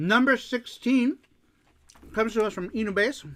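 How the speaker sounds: speaking mid-bite while chewing. Introducing the next listener answer, talking with mouth full. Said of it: "Let me finish my bite".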